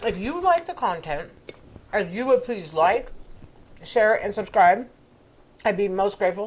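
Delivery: talking while chewing with mouth open. Speaker closing a video to viewers, chewing with mouth open. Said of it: "Sorry for chewing with my mouth open here".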